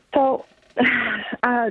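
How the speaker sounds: choked-up, tearful, emotional voice with a sigh.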